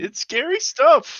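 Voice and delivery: very loud, very high tearful sobbing and crying. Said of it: "So what if I'm crying".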